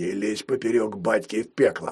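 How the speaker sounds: low, threatening hiss. Narrator reads the fat thief grabbing the skeleton by the collar, hissing. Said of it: "схватил за шиворот скелета и прошипел".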